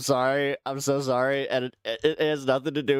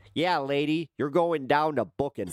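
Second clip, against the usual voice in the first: put-on Chicago-accented voice. Voicing a police officer talking to an arrested lady: chicago accent. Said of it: "authentic Chicago accent with this one".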